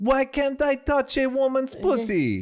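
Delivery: put-on heavy French accent, very high-pitched, slow, drawn out. Retelling what French men said in a documentary: imitating a thick French accent. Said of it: "saying in thick French accents".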